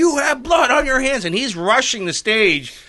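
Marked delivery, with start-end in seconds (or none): 0.0-1.2 furious, higher-pitched angry screamed outburst. Retelling a man rushing the stage at an event: retelling a scream. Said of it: "he's screaming".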